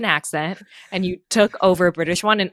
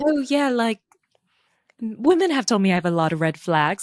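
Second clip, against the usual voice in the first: put-on British accent; 3 semitones higher than usual. Imagining a man in the pods talking to her, imitating a british accent. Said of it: "just the British accent alone".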